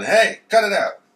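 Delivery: piercing, very high-pitched, loud yell. Voicing Grandma as the police walk in: imitating Grandma yelling. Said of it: "Grandma's yelling".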